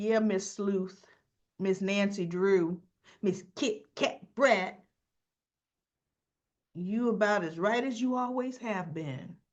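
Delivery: put-on needling, sarcastic, taunting tone. Retelling how Leslie taunted Kat in a scene: imitating Leslie taunting. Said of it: "Leslie was taunting her like".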